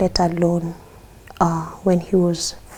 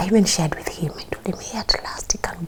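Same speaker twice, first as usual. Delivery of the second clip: soft, hushed whisper; 6 dB quieter than usual. A parent tells a host about their child's milestone, whispering. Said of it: "Now you're whispering".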